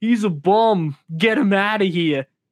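dumb, dim-witted lunkhead meathead voice. Asked whether it's his impression, the speaker shows his dumb lunkhead voice. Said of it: "That's like my dumb lunkhead".

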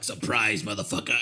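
shark character voice. Retelling a movie scene where the shark attacks: voicing Jaws the shark. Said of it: "that's when Jaws is all like".

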